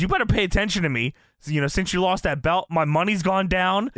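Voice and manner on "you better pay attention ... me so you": ordinary delivery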